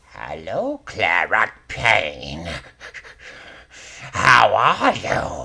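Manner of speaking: cackling voice. Voicing the magic-item shop owner Ophelia greeting Claret Payne, Ophelia's cackling voice. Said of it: "She cackles and says".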